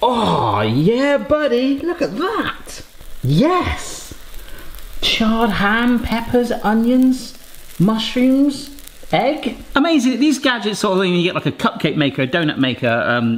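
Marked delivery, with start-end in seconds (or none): 0.0-11.1 high, sing-song, very slow, drawn-out excited scream. Checking food fresh from a kitchen gadget, reacting with an excited scream. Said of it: "(Barry screams excitedly)".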